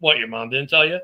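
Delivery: mock deadpan, cop-like flat delivery. Retelling a video of a cop answering a councilman's daughter, imitating a deadpan cop. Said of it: "the cop just deadpan looked down like".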